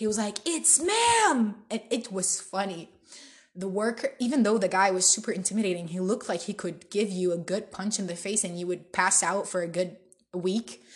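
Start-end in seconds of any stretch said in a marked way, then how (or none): 0.5-1.6 furious, indignant, very high-pitched yell. Retelling how a man yelled at a worker for calling him sir: retelling an angry yell. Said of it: "He was yelling at the worker".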